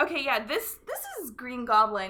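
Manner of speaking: ordinary talk, nothing marked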